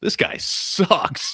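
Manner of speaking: very loud, carrying, too-loud voice. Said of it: "very loudly goes".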